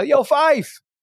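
put-on very high shout, as if calling far. Retelling calling out to someone walking out of a building: retelling own yell across a building. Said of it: "So I yell".

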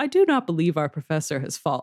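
acted flat deadpan tone. Retelling how a character chimed in after others yelled, imitating Dudu's deadpan. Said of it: "chimes in his like usual deadpan".

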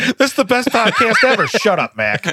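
high voice, laughing through words, cracking up. Reacting to a joke from another speaker, laughing while talking. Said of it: "I'm laughing too hard".

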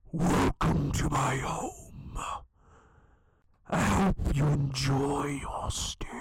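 spooky theatrical whisper. A game master voices an unseen voice speaking in the players' minds; eerie whispering voice. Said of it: "hear the voice again whisper into your mind".

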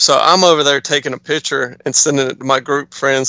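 ordinary talk

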